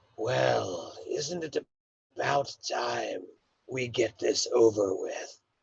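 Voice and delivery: rasping, creaky voice, "well" stretched out. Voicing a figure calling down the hallway to the players: raspy voice. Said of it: "a raspy voice echoes down the hallway".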